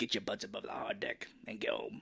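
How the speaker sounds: bad, angry, harsh whisper. Quote the pissed Jester's great line from the movie in a terrible Michael Ironside impression. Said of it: "that's a terrible Michael Ironside impression".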